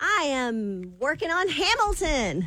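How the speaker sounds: cheerful upbeat voice. Greeting the others after they talk about a big meeting, happy. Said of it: "You sound happy".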